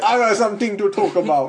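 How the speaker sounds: bad put-on Jamaican accent. Speaker riffs after a Planet of the Apes quote, in an awful Jamaican accent. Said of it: "Was that a Jamaican accent?".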